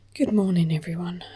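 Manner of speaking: speaking quietly and softly. Greeting viewers early in the morning while a daughter sleeps next door: speaking quietly. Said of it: "I'm speaking a little bit quietly".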